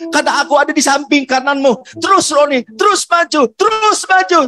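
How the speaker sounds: high, loud cheering. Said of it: "tiba-tiba suaranya berubah".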